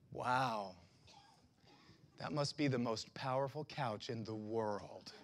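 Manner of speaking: acted, very deep, very soft, wry, calm, amused. Recounting what the voice of the Lord said, imitating God's calm, amused tone. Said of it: "in a calm and almost amused tone".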